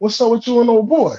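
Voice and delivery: mock dry sarcastic tone, pitch rising at end. Retelling a question to a woman who called back about her guy: retelling own sarcastic remark. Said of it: "I say some, some sarcastic shit like".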